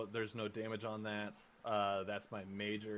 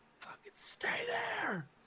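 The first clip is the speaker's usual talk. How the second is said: put-on absolute panic, shrill and very high. Retelling a fight where Boxcar gets hit hard, imitating Boxcar's panic. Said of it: "the absolute panic that comes through Boxcar".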